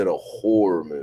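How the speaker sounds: horror dropped low. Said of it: "is it a horror movie or is".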